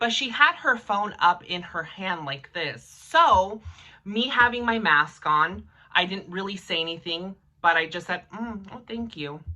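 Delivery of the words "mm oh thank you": very quiet, very soft murmur under the breath. Retelling own thanks to a woman who held the door: really quietly. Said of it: "Really, really quietly".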